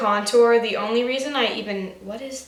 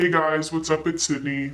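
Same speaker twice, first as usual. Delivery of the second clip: lowered, lower-pitched voice; 7 semitones lower than usual. Trying out a tip for seeming older: lowered voice. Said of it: "Lower your voice".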